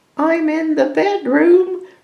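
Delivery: strange, wavering, wobbly, very high-pitched voice. Narrator reads the wolf answering the girl from the bedroom, strange, wobbly voice. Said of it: "replied the wolf in a strange, wobbly voice".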